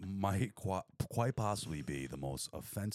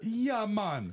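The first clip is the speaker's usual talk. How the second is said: fake Caribbean accent, high-pitched and loud; 6 dB louder than usual. On voice chat, a player asked if they're really Trinidadian answers: fake Trini accent. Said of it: "That is Jamaican".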